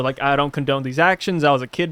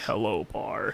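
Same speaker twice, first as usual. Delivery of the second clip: whispered, deep, raspy boogeyman voice; 6 semitones lower, 11 dB quieter than usual. Imagining a horror-movie boogeyman greeting someone, in a really deep, raspy voice. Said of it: "starts off like really deep, raspy voice".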